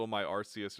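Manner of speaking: plain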